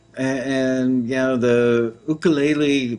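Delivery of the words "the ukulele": put-on Hawaiian accent with attempted Hawaiian pronunciation. A speaker talking about the music industry, trying a Hawaiian accent. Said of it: "trying to do my best Hawaiian accent there".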